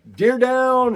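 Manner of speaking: shrill, very high, loud, whooping celebratory yell. Retelling the moment of shooting a deer: imitating own screaming. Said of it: "I start screaming".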